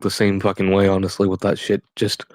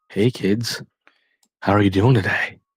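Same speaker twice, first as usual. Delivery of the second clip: slow, drawn-out, creepy voice. Imitating how a creepy man probably sounds on the phone: imitating a creepy man's voice. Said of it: "he probably sounds like".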